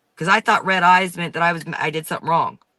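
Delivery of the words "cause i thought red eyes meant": plain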